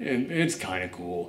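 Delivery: deep, quiet rumble.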